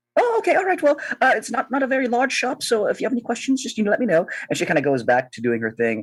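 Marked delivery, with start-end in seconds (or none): 0.1-4.2 squeaky, very high put-on halfling woman voice. Voicing a halfling shopkeeper greeting a newcomer: halfling woman shopkeeper voice. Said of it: "this halfling woman ... and she goes".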